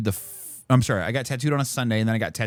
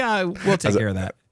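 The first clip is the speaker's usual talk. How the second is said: offhand, casual, slightly pitched-up tone; 7 semitones higher than usual. Retelling a friend's reply about fixing a problem: imitating a nonchalant tone. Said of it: "he says it nonchalantly too".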